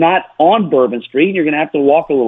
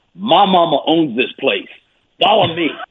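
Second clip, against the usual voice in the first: put-on thick New Orleans accent. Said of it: "thick, thick New Orleans accent".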